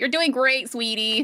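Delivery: high, cheering voice. Retelling a mother encouraging her daughter at a magazine shoot: imitating Kris Jenner. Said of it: "or Kris is like".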